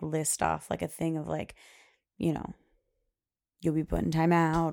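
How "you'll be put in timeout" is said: ordinary talk, nothing marked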